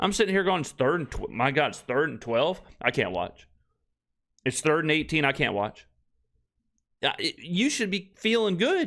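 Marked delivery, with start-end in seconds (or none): none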